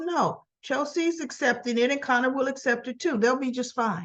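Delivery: plain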